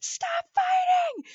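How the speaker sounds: sudden, very high screamed voice. Retelling what they did when their family fought in the car, retelling a scream. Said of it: "and I just screamed".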